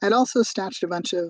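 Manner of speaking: ordinary delivery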